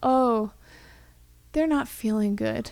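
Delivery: ordinary delivery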